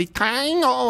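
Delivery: high, put-on Chinese accent on Taino. Naming the taino people, unsure how to say it: chinese accent. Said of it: "I said it with a Chinese accent".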